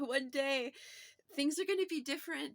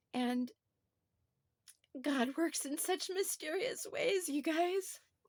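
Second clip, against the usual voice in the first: tearful speech, crying through the words. Speaker talking about giving birth addresses her listeners while crying. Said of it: "I'm crying".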